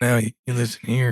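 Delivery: deep, loud American Southern accent. Speaker switches into a put-on voice to say it quick, deep southern voice. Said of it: "with my my deep southern voice".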